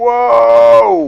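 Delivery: high, loud startled shout.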